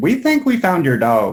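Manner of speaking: put-on thick Georgia country accent, high, loud woman's voice. Retelling a phone call from a lady who called him; super country lady voice. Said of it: "super country lady".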